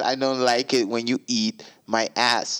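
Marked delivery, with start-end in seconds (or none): none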